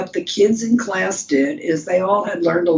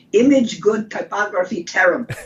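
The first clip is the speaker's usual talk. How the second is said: put-on thick Polish accent. Recalling Mister Zagorski's verdict on his work, imitating Mister Zagorski's Polish accent. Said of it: "The teacher with the thick Polish accent".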